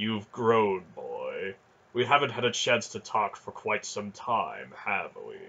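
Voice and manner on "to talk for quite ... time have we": plain reading voice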